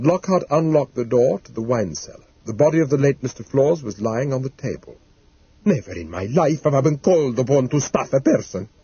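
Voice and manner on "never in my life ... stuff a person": put-on Italian accent. A taxidermist is shown a body laid on a cellar table, Taglioni's Italian accent. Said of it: "taxidermist and specialist in permanent preservation of 5 Brunston Road, ... lapsing into his native tongue. "Mamma mia, you can't be serious."".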